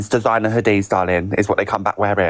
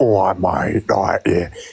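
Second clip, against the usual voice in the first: very slow, mock-masculine, blokey put-on voice; 2 semitones lower than usual. Showing what a masculine way of speaking sounds like: put-on masculine voice. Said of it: "a masculine voice is like".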